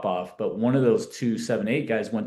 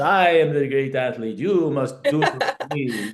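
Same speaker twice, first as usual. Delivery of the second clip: put-on small, little voice with Romanian accent; 4 semitones higher, 4 dB louder than usual. Recalling a Romanian coach at Long Beach City College, speak as him in a little Romanian voice. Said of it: "I hear his little Romanian voice".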